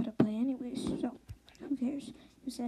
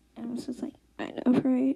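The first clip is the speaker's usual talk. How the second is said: usual speaking voice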